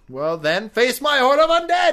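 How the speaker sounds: evil villain voice, very high, very loud, shrill, booming. Playing an evil castle owner who summons undead: acted evil castle lord. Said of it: "And you're like".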